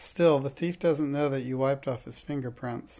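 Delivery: plain reading voice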